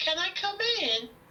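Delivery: put-on creepy, slow, high-pitched ghost-child voice. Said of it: "You're gonna hear a voice in a bit".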